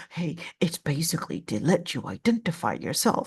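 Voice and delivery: sinister, scary, devilish voice. Voicing how the shaitan speaks in our minds, in a scary shaitan voice. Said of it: "I sound so scary like a shaitan".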